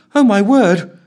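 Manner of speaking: high, loud exclamation, giddy thrill and cold fear. During the launch countdown, Ellen grips her chair: giddy excitement and fear. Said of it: "exclaimed Ellen, with a mixture of giddy excitement and outright cold fear".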